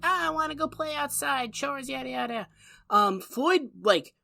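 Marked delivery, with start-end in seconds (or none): 0.0-2.5 put-on high, pitched-up cute-kid voice. Recapping a scene where Opie comes in doing chores: imitating Opie as a cute kid. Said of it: "he's doing some cute kid shit".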